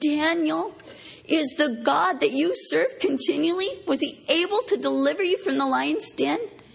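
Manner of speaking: high, grieving, lamenting cry. Retelling the king crying out to Daniel at the tomb: retelling a lamenting cry. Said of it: "cried out with a lamenting voice".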